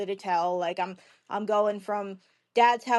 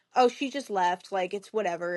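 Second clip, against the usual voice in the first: ordinary talk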